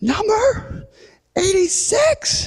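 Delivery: very high, shrill, shrieked scream. Retelling a woman calling a number in a lobby, imitating her screaming. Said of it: "So she screams".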